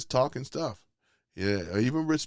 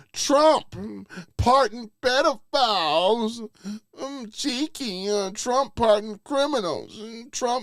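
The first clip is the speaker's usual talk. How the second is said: put-on mocking soy boy voice, higher and louder; 12 semitones higher, 6 dB louder than usual. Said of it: "soy boy voice".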